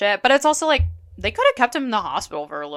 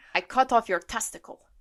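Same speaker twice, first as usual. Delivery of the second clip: put-on Russian-accented voice, higher pitch; 6 semitones higher than usual. Reading a character's quote when asked, Svetlana impression. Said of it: "you can do a good Svetlana impression".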